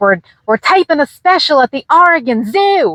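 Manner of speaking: high-pitched, badly done, laid-on Australian accent. Retelling a morning greeting with a man, in Steve Irwin's Australian accent. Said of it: "the best Australian Australian accent I can do".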